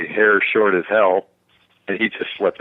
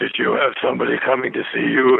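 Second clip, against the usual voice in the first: put-on creaky, rough elderly man's voice; 3 semitones higher than usual. Retelling a film scene where the old man speaks: imitating an old man's voice. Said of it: "when the old man speaks, he puts his head up and goes".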